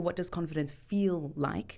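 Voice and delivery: plain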